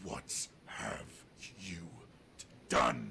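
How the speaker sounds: very loud, deep growl. Narrating a scene, the speaker voices a man who growls again: growling voice. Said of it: "he kind of g- growls again".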